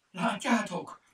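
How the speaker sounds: very high shout through chattering teeth. Narrator reading Mimi looking up at two rocky peaks, shouting with chattering teeth. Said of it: "Kiáltotta vacogó fogakkal".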